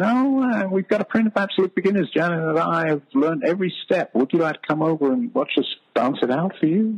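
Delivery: very high, squeaky little voice.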